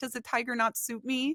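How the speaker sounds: high, teasing voice through laughter. Retelling a character laughing at another: laughing while teasing. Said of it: "he's laughing at him".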